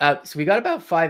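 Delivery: voice cracking mid-phrase. Speaker tells the chat about five minutes remain, voice cracking. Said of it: "My voice is cracking".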